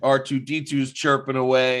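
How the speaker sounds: ordinary talk, nothing marked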